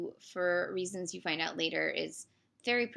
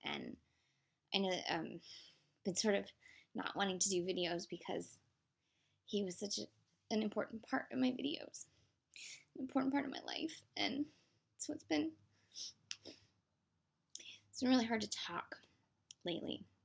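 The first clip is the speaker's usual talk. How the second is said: crying, tearful, halting, voice breaking mid-phrase; 3 semitones higher, 6 dB quieter than usual. Explaining to viewers why videos stopped for a while; crying. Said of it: "now I'm crying".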